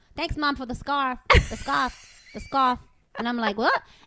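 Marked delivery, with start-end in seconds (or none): 0.2-2.8 put-on Long Island twang, drawn-out vowels. A mother imitates how he thanks her, in a Long Island accent with stretched vowels. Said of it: "Long Island accent has a little bit of that... they extend the vowel".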